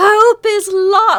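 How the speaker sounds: acted yelling in character voice. Playing a character who copies a cry she has heard: yelling in character. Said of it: "will also yell".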